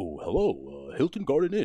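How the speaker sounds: put-on polished professional phone voice.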